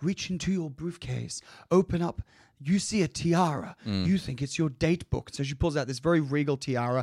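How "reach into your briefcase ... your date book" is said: coaxing stage whisper, half-whispered. Retelling how Rex half-whispers orders into someone's ear: imitating Rex half-whispering. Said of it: "whispering in her ear".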